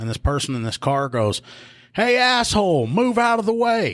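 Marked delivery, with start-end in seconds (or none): 1.9-3.9 put-on very high, stretched-out, drawn-out holler. Retelling a person in a car hollering at them, imitating someone hollering. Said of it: "I hear somebody hollering from that car".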